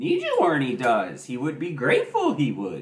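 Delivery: low, swooping character voice. A streamer signing off and asking viewers to support the stream, Yoda voice. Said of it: "Yoda voice".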